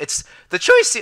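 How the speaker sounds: voice cracking, breaking very high. Explaining which option they would pick, the speaker's voice cracking. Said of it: "voice crack".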